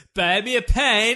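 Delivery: put-on slow, loud yell with a slight Welsh accent. Asked about a Welsh accent, the speaker offers a Pierce Brosnan GoldenEye impression. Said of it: "Which I assume is slightly Welsh".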